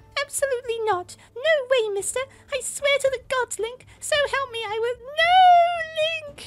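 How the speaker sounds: very high screaming, not drawn out. Narrating Zelda crying out to Link at the cliff edge, screaming. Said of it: "Zelda screamed".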